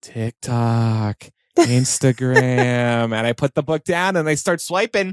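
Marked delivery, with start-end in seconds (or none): 0.0-3.1 small, tempting little devil voice. Speaker voicing the little devil in their brain while trying to read: little devil voice. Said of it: "that little devil goes".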